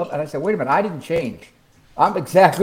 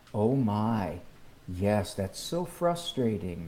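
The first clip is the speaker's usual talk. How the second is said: hushed, very quiet, soft, gentle soft-spoken voice; 6 semitones lower, 12 dB quieter than usual. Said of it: "it's what I call the very soft-spoken".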